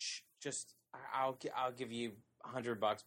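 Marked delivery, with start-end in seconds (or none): none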